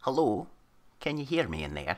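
quiet whispered character voice. Playing a character who pulls out a stone and speaks to it: whispering in character. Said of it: "sort of whisper to it".

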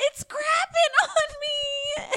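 very high, loud, wailing crying yell. Describing a viral video, quoting the girl with a kitten; imitating crying and yelling. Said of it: "she's crying and yelling".

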